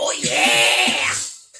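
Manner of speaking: thick, countrified wrestler-style voice with heavy twang. Imitating how a wrestler says his catchphrase: redneck Macho Man Randy Savage voice. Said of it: "Sounds like a, a redneck version of".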